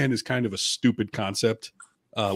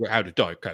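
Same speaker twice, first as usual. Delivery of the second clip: put-on old butler voice, lower; 4 semitones lower than usual. Acting out Alfred asking Batman for Diet Coke: Michael Caine voice. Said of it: "That's Michael Caine".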